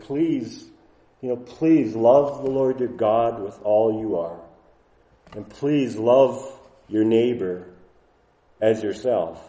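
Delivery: gentle, imploring, tender and compassionate pleading voice. Showing how the passage could be read aloud, in a tender, compassionate, pleading voice. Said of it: "a tender, compassionate, pleading voice".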